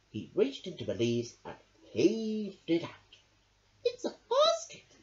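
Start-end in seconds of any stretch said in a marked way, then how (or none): 3.8-4.7 very high, squeaky little mouse voice. Narrator reads Mouse as Badger pulls something from the bushes, squeaking. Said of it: "squeaked Mouse".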